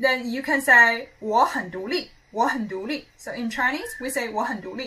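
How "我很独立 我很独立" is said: normal talking voice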